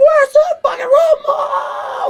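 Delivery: put-on very high, very slow, furious shriek. Describing a woman who can't find the remote, imitating her screaming. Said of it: "'Cause she's like screaming".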